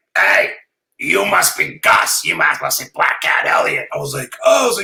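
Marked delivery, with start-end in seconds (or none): 0.2-3.9 put-on old-school, night-shift radio DJ voice. Retelling how the booking guy greeted you as you got out, use a Wolfman Jack voice. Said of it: "he's got a Wolfman Jack voice".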